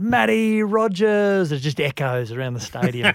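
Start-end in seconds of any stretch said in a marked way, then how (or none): 0.0-1.5 high, ringing, far-carrying yell, acted out. Retelling how a worker across the stadium called out a name: imitating a stadium worker yelling. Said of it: "this guy from the stadium yells out".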